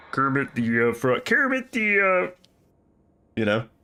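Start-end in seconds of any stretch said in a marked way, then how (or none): 0.1-2.3 same words repeated at different pitches. Showing the mod's kids saying it at different pitches: Kermit the Frog voice. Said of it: "they say it in, like, different pitches".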